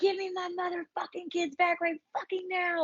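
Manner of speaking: very high, wild, frazzled shriek. Recounting bursting in on a church sermon; retelling a scream. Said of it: "I'm screaming".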